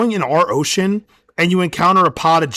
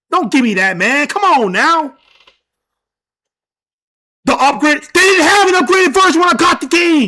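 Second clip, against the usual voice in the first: full-on, loud, very high-pitched yelling; 9 semitones higher, 4 dB louder than usual. Ranting about a video game's upgrade, yelling. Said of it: "sorry for yelling".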